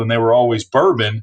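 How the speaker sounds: normal talking voice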